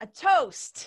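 loud, high-pitched call.

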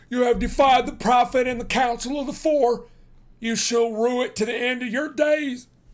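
furious, shrill voice. Stangerson, being shown out, speaks to the old farmer, furious.

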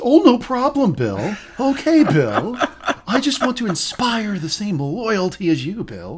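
earnest, pitched way up. Discussing a show, the speaker acts out Tom's replies to Bill in Tom's serious voice. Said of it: "He has the serious voice".

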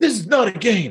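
play-acted rising yell. Recounting a father talking to his son in the locker room, retelling a rising yell. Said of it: "So it's getting louder and louder".

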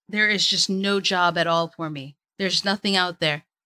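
ordinary delivery

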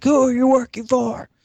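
put-on high-pitched furious yell. Retelling a scene where Jack interrogates Nina: Jack Bauer yell. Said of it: "the Jack Bauer yell".

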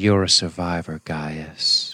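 sultry, seductive delivery, laid on. Recapping a scene where Six speaks to Gaius: Six's sultry tones. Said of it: "with her sultry tones".

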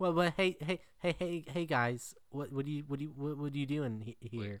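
halting, stop-start stuttering rambling, repeated "hey". Showing how the film's actor speaks: imitating the actor's halting speech. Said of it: "That's how he speaks".

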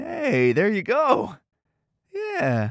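patronizing, talking-down voice. Talking to a spider to coax it closer: patronizing. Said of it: "maybe don't be so patronizing".

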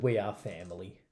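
usual speaking voice

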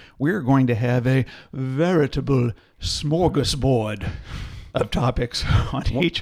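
odd, hard-to-place accent, possibly Scandinavian. Introduce the format of the season 3 chats, in an unplaceable, vaguely Scandinavian accent. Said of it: "What was that accent?".

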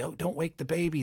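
hushed whisper. Speaker demonstrates a read, like talking to a sleeping baby, whispering to a baby. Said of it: "when you whisper and talk to the baby".

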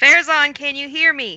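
high, reaching calling-out voice. A player's character calls out to Farazan as loudly as she can. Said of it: "call out in the loudest voice that her body can muster".

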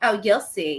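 mock-cocky bragging tone. Retelling how she got cocky after a few minutes of his help; mock-cocky. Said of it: "she gets like really cocky about it".

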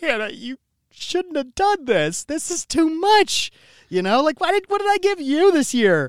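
mock tearful voice. Retelling opening a gift from hannah, retelling own crying. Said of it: "I just started crying because I was like".

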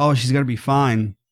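ordinary talk

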